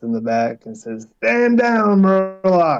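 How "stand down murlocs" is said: loud, high, projected shouting meant to carry far. Calling out in character to Murlocs far in the back: in-character yell. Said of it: "he yells back past the swamp boy and kinda tries to project his voice".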